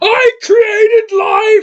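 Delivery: sudden very high, loud shrieking outburst. Mocking an actor who suddenly screams a line: imitating Eddie Redmayne screaming. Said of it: "he screams".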